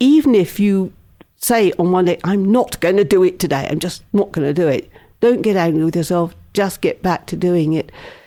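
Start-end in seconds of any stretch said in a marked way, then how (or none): none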